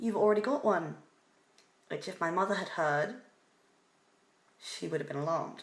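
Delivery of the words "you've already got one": put-on blaring, carrying, booming, very loud voice. Retelling what a guy said in a pet shop: imitating a very loud voice. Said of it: "said in the loudest voice possible".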